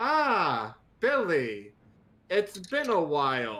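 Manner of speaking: called-out voice projected to carry far. Standing outside the front door, greeting someone so everyone inside hears: very loud. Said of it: "say very loudly so that everybody can hear".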